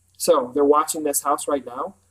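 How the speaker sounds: ordinary delivery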